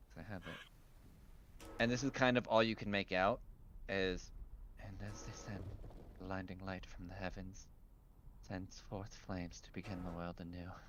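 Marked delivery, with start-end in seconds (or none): 4.8-10.7 whispered murmur, very quiet, barely audible. Voicing a man heard as the players get closer: whispering to himself. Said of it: "this man kind of whispering to himself".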